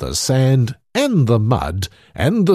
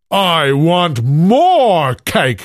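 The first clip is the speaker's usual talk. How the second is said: loud, pitched-up bellowing giant roar, more stretched out; 6 semitones higher, 5 dB louder than usual. Narrator voicing the giant after he gulps down the cake, roaring giant. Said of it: "roared the giant".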